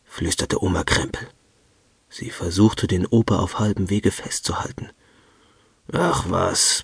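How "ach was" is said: gruff grumbling. Grandpa waves off Grandma's plea not to open the door, grumbled. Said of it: "brummte Opa Krempel".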